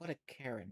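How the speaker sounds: hushed, soft, under-the-breath half-whisper. A guild member remarks as you leave the guild hall, half-whispering. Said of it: "just whisper as you're leaving".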